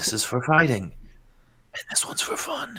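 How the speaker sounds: quiet high whisper. Speaking to a rifle in a mild break of sanity: whispering to his gun. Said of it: "He whispers to his gun".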